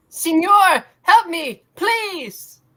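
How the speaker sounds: pleading cry, calling out. A man in trouble begs for help, crying out for help. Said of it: "He's crying in English".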